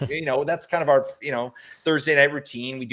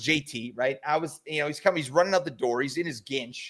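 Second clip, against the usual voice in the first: usual speaking voice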